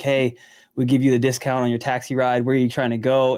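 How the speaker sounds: ordinary delivery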